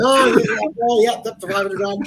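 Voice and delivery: very high, loud, fast auctioneer patter. Told they sounded like an auctioneer, the speaker shows off auctioneer patter. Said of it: "I could do that".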